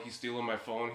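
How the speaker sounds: ordinary talk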